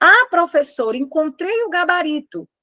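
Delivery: eager, keen student voice.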